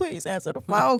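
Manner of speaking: high, tearful, crying and begging voice. Retelling a voicemail from mom begging to be called back: imitating mom crying. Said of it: "I got voicemails of her crying".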